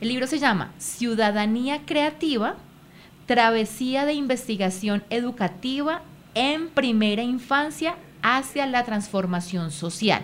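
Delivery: said slowly, spaced out with pauses.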